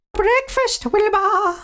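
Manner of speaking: very high-pitched calling out. Winnie comes down for breakfast and calls for Wilbur, calling out. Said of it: "She called".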